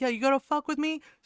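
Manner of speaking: put-on yelling in a woman's manner. Retelling how a woman yelled at a man, mock yelling. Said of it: "She yelled".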